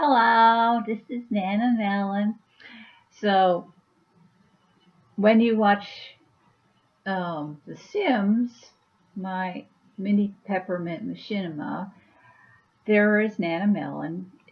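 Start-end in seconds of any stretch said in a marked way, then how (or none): 0.0-2.4 Rhode Island accent, character voice. Speaker introducing her character Nana Melon, in a Rhode Island accent. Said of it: "She's got a Rhode Island accent".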